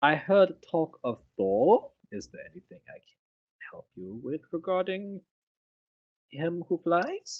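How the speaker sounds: put-on old man voice with funny accent. Back after the other speaker's mic faded, speaking in a quiet old-man voice. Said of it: "you just get so quiet when you start talking like the old man".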